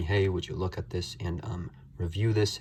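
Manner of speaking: ordinary talk, nothing marked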